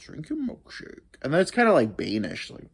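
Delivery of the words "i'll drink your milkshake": breathy, whispered put-on film villain voice. Showing an impression from a favorite movie: There Will Be Blood impression. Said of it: "my two main ones".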